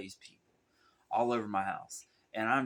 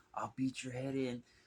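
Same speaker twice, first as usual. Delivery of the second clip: high, mild mock yell, threatening holler; 5 semitones higher, 4 dB quieter than usual. Retelling screaming at a man imagined in the closet: retelling own screaming. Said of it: "I'm standing there screaming at somebody".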